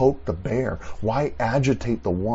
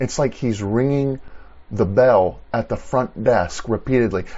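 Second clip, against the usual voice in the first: ordinary talk, nothing marked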